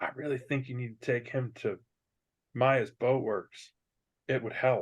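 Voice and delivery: soft, hushed half-whisper. In a tabletop game, Torden leans over to Yadu: half-whisper. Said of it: "he says in a in a whisper".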